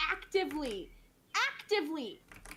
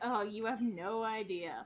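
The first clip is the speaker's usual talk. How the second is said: put-on laughing tone, lower pitch; 8 semitones lower than usual. Retelling a character's reply from a scene, laughy Caraway reply. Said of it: "in a, like, a kinda laughy sort of way".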